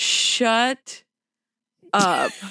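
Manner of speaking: chilling, frosty, ice-cold snap. Retelling a passenger's remark to a wailing child on a plane: imitating Jess's ice-cold snap. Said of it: "like the coldest motherfucker".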